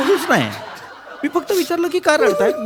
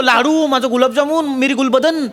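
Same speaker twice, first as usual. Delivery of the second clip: ordinary talk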